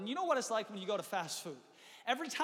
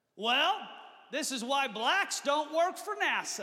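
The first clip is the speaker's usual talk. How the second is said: loud, pitched-up, announcing delivery; 5 semitones higher, 6 dB louder than usual. Telling a story about a man in a crowded restaurant; retelling a loud remark. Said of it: "in a loud voice".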